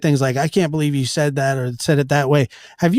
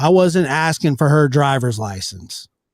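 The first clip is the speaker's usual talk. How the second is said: plain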